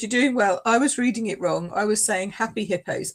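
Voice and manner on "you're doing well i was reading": usual speaking voice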